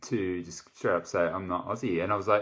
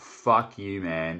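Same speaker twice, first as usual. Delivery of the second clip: mock furious, angry outburst; 3 dB louder than usual. Retelling own furious reaction to being called not australian: retelling a furious outburst. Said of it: "I was legit fuming".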